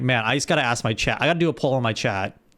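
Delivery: ordinary talk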